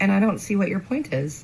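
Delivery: ordinary talk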